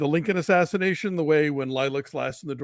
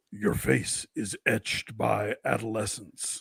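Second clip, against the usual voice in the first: slow, breathy growl, taking its time; 5 semitones lower, 4 dB quieter than usual. Reading a requested poem aloud: a little growlier Josh Brolin as Thanos. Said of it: "I'll try and go a little growlier".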